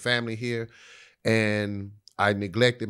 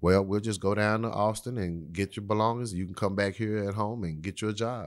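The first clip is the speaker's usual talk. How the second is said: even, smooth, unruffled, calm fatherly voice; 3 dB quieter than usual. Act out his reply on hearing you flunked out of college, in a smooth, calm Johnny Walker voice. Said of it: "in the smooth, calm, Johnny Walker voice".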